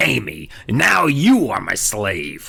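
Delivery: icy, harsh, grating, cold rasp, delivered very slowly. Reading the book aloud, voicing Slappy's threat to Amy, harsh cold Slappy rasp. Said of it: "His threat came out in a harsh, cold rasp".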